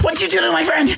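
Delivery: very high, shrill, rushing yell. Voicing a character rushing at an enemy: yelling.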